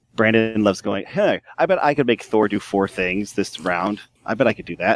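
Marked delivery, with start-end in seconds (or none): none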